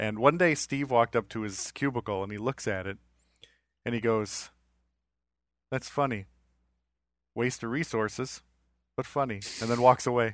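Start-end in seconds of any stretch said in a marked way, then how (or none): 5.7-9.4 put-on flat male deadpan, quieter. Speaker retells what Steve said looking at a cubicle, Steve's deadpan delivery. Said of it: "he just had that deadpan delivery".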